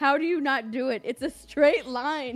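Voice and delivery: loud, fed-up, exasperated frustration. Retelling a gaming partner's remarks while she couldn't walk straight: imitating someone frustrated. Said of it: "he was getting so frustrated".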